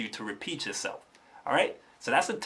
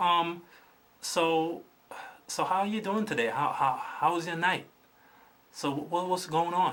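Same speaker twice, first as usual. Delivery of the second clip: subdued, low-energy, held-back voice, not projecting; 4 semitones higher than usual. Showing men the wrong way to speak to women; subdued, low-energy. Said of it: "not projecting themselves, of being too low energied, too subdued".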